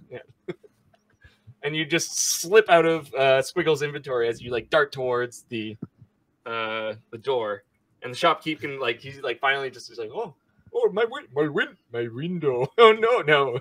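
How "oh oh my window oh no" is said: put-on Indian accent, much slower. Voicing the shopkeep in a role-play game as the players dart toward the door; put-on indian accent. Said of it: "I heard an Indian accent".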